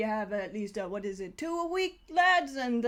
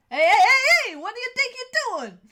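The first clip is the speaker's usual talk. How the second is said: very bad fake New York accent, high, shrill, loud; 12 semitones higher, 9 dB louder than usual. As the music stops, penguins confront you: bad new york accent. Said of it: "very bad New York accent penguins".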